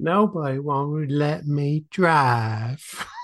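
put-on Southern accent. Repeating the closing line of a remembered skit, in a Deep South accent. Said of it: "in a deep South accent".

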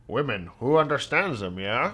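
cartoon creature voice with swooping pitch. Quoting a favorite line from a Futurama episode, done in a Zoidberg voice. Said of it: "In his Zoidberg voice".

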